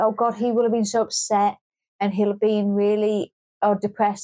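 ordinary talk

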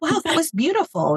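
high, swooping, gushing tone of awe.

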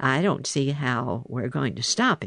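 plain

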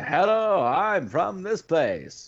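put-on old-film mid-Atlantic accent, very high and slow. Discussing old media, demonstrating the accent most people used: mid-Atlantic accent. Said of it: "using that mid-Atlantic accent".

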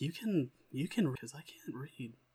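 hushed, half-whispered, under the breath. Half-whispering to Avil in character, off to the side: half-whispering in character. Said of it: "I'm just kinda whispering to Avil".

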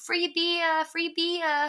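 put-on high, drawn-out, light Brooklyn accent. Retelling a scene where she lures the construction workers in, little Brooklyn accent. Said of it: "I love her little like Brooklyn accent".

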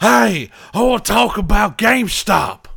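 mock drawl, high pitched, slow and unhurried. Retelling how another person imitates a guest: imitating Jesse's impression of John. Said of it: "Jesse would say he'd come on the show and be like".

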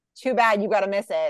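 ordinary talk

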